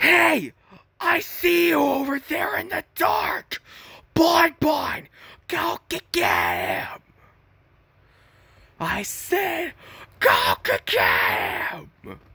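very high, lively sing-song voice, pitch swooping around. Doing Funtime Freddy's voice after naming it a favorite: Funtime Freddy voice. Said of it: "Funtime Freddy's voice is pretty sick".

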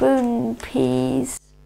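very quiet. A girl sees peas bobbing in her milk and speaks very quietly. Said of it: "she said very quietly".

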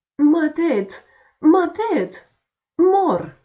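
very high, shrill, very loud shrieking scream. A six-year-old boy whose head just struck the cart shaft, screaming. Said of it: "Țipă el".

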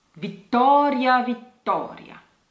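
Vittoria twice in a steady, even rhythm. Teacher models the word for learners to repeat, with rhythmic pronunciation. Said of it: "The first one would be rhythmic like this".

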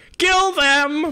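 very high, shrill, loud fanatical shout. Voicing a cultist leader ordering an attack: cultist battle cry. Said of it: "in his best cultist fashion, is like".

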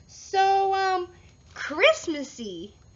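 put-on forced cheer. Frog answers Bear about his candles, exclaiming with a put-on smile. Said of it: "exclaimed Frog, putting on a big smile".

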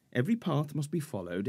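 plain reading voice

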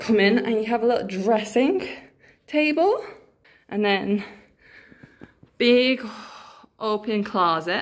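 talking breathlessly, winded, catching breath between words. Showing the new accommodation right after a long walk with backpacks, out of breath. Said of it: "Sorry if I'm out of breath".

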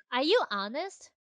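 you stressed, slow delivery with rising end.

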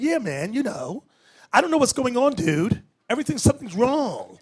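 casual bro-style talk. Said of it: "they talk like this".

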